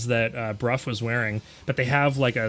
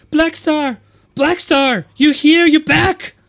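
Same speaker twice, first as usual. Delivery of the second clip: super shrill, very loud, high squeal; 11 dB louder than usual. Game narrator voicing Mixie running over to Blackstar: shrill Mixie voice. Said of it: "super shrill voice that I absolutely cannot do".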